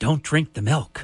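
put-on hushed, quiet whisper in a childlike voice. Retelling a Little Rascals scene, kids passing milk: imitating kids whispering. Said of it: "they're all whispering".

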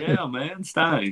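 put-on thick Southern accent, drawn out. Retelling how he told others his favorite wrestler, in a thick Southern drawl. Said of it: "when I had my thick Southern drawl accent".

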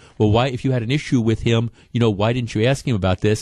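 ordinary delivery

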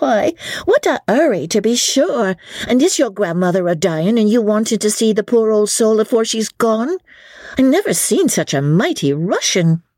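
good-humoured banter through a laugh. A woman serving tankards teases an impatient customer; laughing, teasing. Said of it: "laughed Sally".

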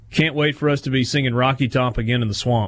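ordinary delivery

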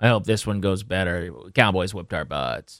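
put-on flat, no-energy voice. Retelling a coach's answer in a TV interview, imitating zero energy. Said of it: "just zero energy".

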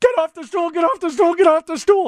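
acted, very high, shrill, pleading, repeated screaming. Telling how their foot got trapped under a stool, retelling own screaming. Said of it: "And now I'm screaming".

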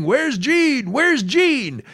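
eager, high-pitched, excited screaming. Storyteller re-enacting shouting at passing grannies at a parade, retelling a scream. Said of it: "And I'm screaming".

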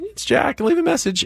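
put-on very high, quick, pre-voice-change child voice. Parent recalls son's old voicemail greeting: imitating Jack's high child voice. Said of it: "in his pre-voice change, high voice".

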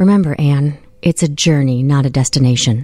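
mock-hushed, quiet put-on voice. Retelling what your dad said at your sister's house, retelling a quiet remark. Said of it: "your dad quietly said to me".

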